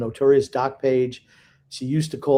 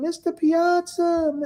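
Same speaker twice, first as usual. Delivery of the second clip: put-on tiny, very high-pitched little child's voice. Retelling how a young boy addressed his favorite player, in a little kid voice. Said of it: "like little kids have that little voice".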